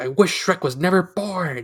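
furious, high-pitched, angry villain rant. Retelling a movie plot where Rumpelstiltskin is angry: angry Rumpelstiltskin impression. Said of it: "That wasn't a bad impression".

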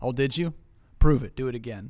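mock bone-dry, unmoved, dead-straight deadpan delivery. Retelling how he answered excited youth group kids, imitating a deadpan reply. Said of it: "he would look at them completely deadpan and be like".

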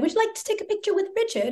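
shaky attempted British accent. Retelling what staff in london asked on arrival: imitating a british accent. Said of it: "I'm never gonna do that accent again".

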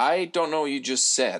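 plain

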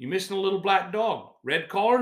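strong put-on Australian accent. Retelling a man's question, in a heavy Australian accent. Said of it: "he's in a heavy Australian accent".

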